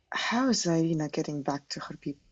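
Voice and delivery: low undertone. Role-playing character turning to his brother with a question, lowered voice. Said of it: "Just lowering my voice down".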